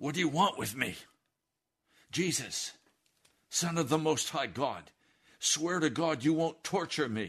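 shrill, full-force, high desperate begging scream. Retelling a man on his knees screaming at jesus; retelling a scream. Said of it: "he screams at Jesus".

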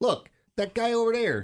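put-on Chicago accent. Explaining which accent he likes, Chicago accent. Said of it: "I like the Chicago accent where the guy's like".

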